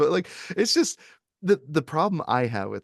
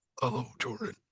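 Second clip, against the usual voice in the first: familiar, well-worn puppet voice; 9 dB quieter than usual. Doing an impression of Jigsaw saying his famous line: Jigsaw impression. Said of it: "one I can do".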